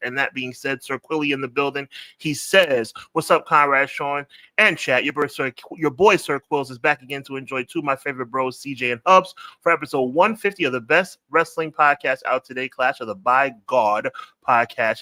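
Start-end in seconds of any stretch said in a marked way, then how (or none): none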